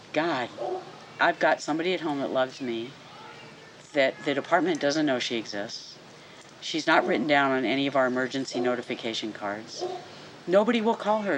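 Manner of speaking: ordinary talk, nothing marked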